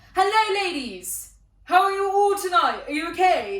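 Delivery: acted, very high, very loud, over-the-top pop-star voice. Retelling how a coworker greeted a table: imitating someone greeting like a pop star. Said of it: "speak to people like he was, I don't know, at a [name] concert".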